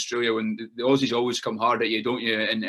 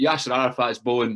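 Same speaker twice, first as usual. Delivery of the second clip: usual speaking voice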